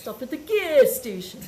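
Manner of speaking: put-on Italian-accented voice. Quoting a friend's stepdad asking to stop, imitating Frank's Italian accent. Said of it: "with his Italian accent".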